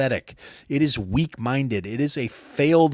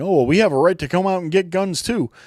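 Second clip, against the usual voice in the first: sudden, high, loud, protesting scream; 5 semitones higher, 5 dB louder than usual. In a rant, the speaker mimics leftist jokers, mock screaming. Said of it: "all of a sudden screaming".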